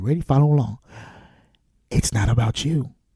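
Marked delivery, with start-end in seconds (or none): 1.9-2.9 low, soft, hushed half-whisper. Repeating a point to the listener a second time: half-whispering. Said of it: "I'm going to whisper it to you".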